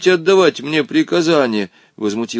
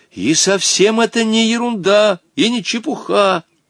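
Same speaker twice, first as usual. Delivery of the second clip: annoyed, testy, irritated tone, rising in pitch; 5 semitones higher than usual. Continuing an argument after being corrected, irritated. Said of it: "раздраженно продолжал Волька".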